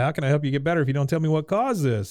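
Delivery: put-on demanding tone. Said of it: "in her very demanding way".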